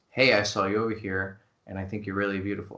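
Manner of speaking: stiff, lifeless, flat, wooden monotone, low-pitched. Demonstrating how a newbie sounds: flat, wooden delivery. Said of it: "it's so wooden".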